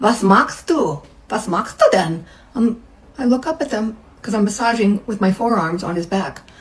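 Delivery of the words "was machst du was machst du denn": put-on heavy, thick Russian accent while speaking German. Retelling two women walking in during a massage, heavy Russian accent. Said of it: "with a heavy Russian accent".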